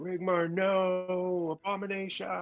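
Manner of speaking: yelling out. A player's character shouts to Rigmar as he becomes an abomination, shouting out. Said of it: "Do you shout out that Rigmar".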